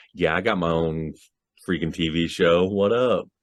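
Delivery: ordinary talk, nothing marked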